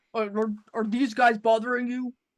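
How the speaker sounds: attempted deep character voice, dropped low. Voicing a shapeshifter imitating Orgoth, sneaking behind Lapis: attempted Orgoth voice. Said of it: "this is gonna be perfectly Orgoth's voice".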